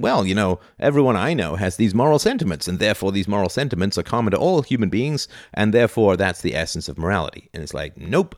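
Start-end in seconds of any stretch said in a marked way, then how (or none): none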